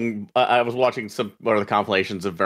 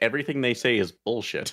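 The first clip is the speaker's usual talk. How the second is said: ordinary talk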